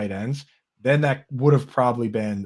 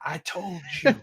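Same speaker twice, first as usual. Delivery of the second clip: high-pitched, furious, vindicated, angry screaming shout; 7 semitones higher, 3 dB quieter than usual. Retelling how a player's father reacted to a touchdown: imitating a father screaming. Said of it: "he is screaming".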